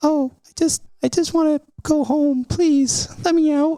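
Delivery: small, squeaky, tiny, very high little voice. Opening a lantern in the game, the speaker voices what everyone hears: tiny voice. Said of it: "everyone hears a tiny voice say".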